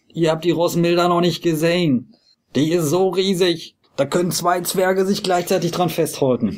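pushy, high, insistent barker's patter, on and on. Game master voicing a colorfully dressed person calling across to another ship, calling out insistently.

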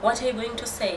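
ordinary talk, nothing marked

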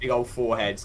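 ordinary delivery

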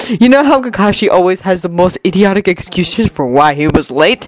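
plain reading voice

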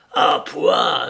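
exclaiming loudly, spitting the words out. The doctor sips from the cup and spits it out; crying out while spitting. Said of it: "S'écria-t-il en recrachant".

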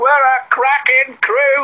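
said with a laugh. Kelly, after Jack is told he can stay with the pack, speaks laughing. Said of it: "laughed Kelly".

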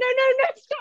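panicked, frantic delivery.

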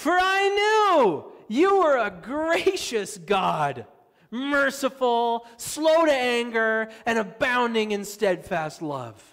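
very loud, high, put-on whiniest whine. Retelling what he bitterly said to God, mock-whiny tone. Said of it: "he says in the whiniest tone".

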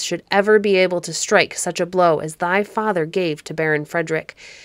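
ordinary delivery

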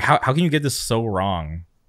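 ordinary talk

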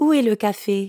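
ordinary talk, nothing marked

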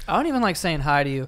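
normal talking voice

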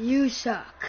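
computer voice-assistant, text-to-speech style. Streamer retells a chat message read into their ear, in Siri voice. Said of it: "But like in the Siri voice".

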